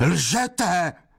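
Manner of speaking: high, bellowed roar, pitched way up. A man shouts an accusation right at the ear of the woman he questions; roaring. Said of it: "Zařval jí u ucha".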